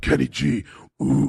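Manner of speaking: put-on monster voice. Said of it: "It sounds like the Cookie Monster".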